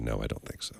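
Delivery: quiet, low put-on voice. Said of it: "She said".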